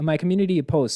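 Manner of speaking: ordinary talk, nothing marked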